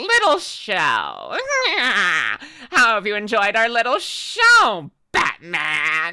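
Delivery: swooping villain voice, drawn-out "how", swinging pitch. Speaker shows off a voice they find too fun to do, in a Skeletor voice. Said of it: "the voice that sounded like when I say little show".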